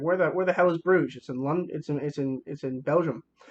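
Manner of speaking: usual speaking voice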